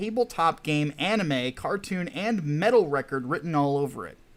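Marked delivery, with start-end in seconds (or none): none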